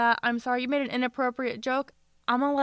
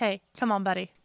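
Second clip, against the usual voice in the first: mock deadpan tone, lower; 3 semitones lower than usual. Speaker retelling how they reacted to him, retelling a deadpan remark. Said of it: "I was just kind of deadpan about it".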